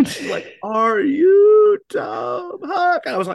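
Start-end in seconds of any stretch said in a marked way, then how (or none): 0.6-3.0 very high, very slow, drawn-out loud yell over music. Retelling a woman who approached him at a loud gig, imitating how she sounded. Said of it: "I'll try and do it like what it sounded like".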